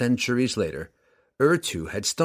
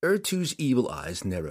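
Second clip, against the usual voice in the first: ordinary delivery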